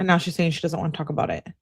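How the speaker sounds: normal talking voice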